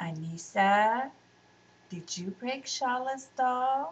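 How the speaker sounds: mild, gentle, soft-spoken tone. Mother questions little Anissa in front of everyone, gently. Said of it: "asked Mother gently".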